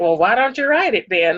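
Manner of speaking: sarcastic, snarky retort. Retelling a daughter's reply at dinner: imitating Adriana's sarcasm. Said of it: "was being sarcastically".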